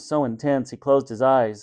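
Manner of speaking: ordinary delivery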